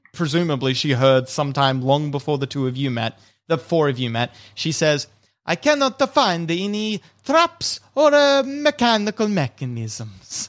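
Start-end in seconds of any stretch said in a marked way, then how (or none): 5.4-10.5 slow, drawled, swooping sing-song character voice. Voicing Hertha telling the party she found no traps: Hertha's character voice. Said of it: "says in a voice that you've".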